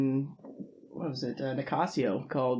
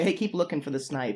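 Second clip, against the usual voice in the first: ordinary talk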